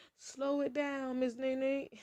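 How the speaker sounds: high-pitched, slow speech to self. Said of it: "I'm talking too fast for my own goodness".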